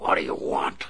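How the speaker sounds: snarling, growling voice. Narrator reads a restrained captive waking to his captor: snarled. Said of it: "he snarled".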